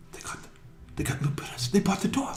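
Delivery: hushed gossiping whisper. Voicing townsfolk gossiping about the buyers: whispering townsfolk. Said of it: "there's some people whispering".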